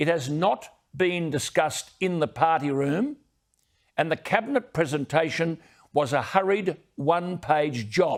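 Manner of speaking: slow, unhurried, deliberate, each word laid out. A speaker criticizing a government energy policy, speaking slowly. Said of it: "I've got to say this slowly".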